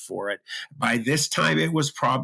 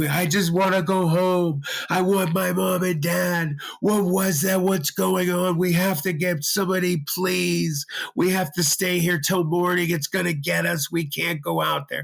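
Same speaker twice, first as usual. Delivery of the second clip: mock high, tearful screaming, crying and wailing; 7 semitones higher than usual. Retelling what a terrified buddy kept saying, imitating him screaming and crying. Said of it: "was screaming and crying the entire time".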